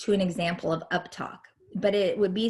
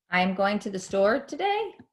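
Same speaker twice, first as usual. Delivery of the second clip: question-like rising tone at the end on today. Explaining punctuation, the speaker says a statement as a question: rising intonation on a statement. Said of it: "my voice would go up if I said".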